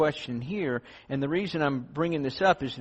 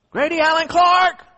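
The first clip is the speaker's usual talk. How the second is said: put-on very high, very loud, shrill scolding; 11 dB louder than usual. Parents calling a child's full name when in trouble, mock-scolding full-name call. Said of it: "that's the kind of tone I would want to run from".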